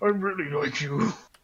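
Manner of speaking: stuttering heavily, heavy stammer. Voicing a red-faced character confessing: stuttering heavily. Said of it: "he's now stuttering heavily".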